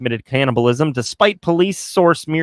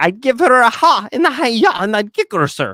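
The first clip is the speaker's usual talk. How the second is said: stock cartoon man voice; 7 semitones higher than usual. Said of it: "That's literally my point of reference here".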